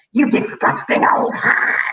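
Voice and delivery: put-on scary, scornful, nasty old man voice. Retelling reading aloud to a class and doing the voices: loud Mr. Twit voice. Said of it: "like this".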